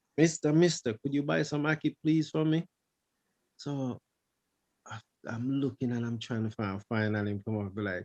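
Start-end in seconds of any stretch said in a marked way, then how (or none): 0.2-2.7 put-on tiny, high voice of a small boy. Retelling a boy in a crowd asking him to buy Aki, in a little boy's voice. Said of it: "You're a little voice in there".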